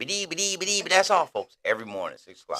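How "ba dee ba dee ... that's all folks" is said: high, loud stuttering delivery. Retelling the sergeant ordering the impression every morning: Porky Pig stutter. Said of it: "do it for me".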